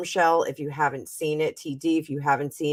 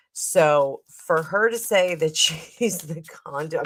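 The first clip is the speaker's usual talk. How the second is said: speech broken up by laughing throughout. Reacting to a woman's claim, laughing while talking. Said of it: "I'm sorry, I'm laughing".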